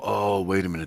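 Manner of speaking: ordinary talk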